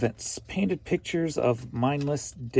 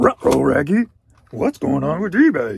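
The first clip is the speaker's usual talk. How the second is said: very loud, swooping, clumsy cartoon dog voice; 8 dB louder than usual. Speaker tries a cartoon dog line, Scooby-Doo voice. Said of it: "I can't do Scooby's voice very well".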